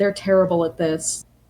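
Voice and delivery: ordinary talk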